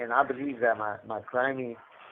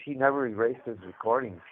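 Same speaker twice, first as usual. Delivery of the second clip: normal talking voice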